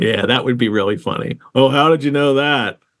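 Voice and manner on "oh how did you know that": mocking, sarcastic tone. Showing how a character's lines could be read, sarcastic reading. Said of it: "some sarcasm of".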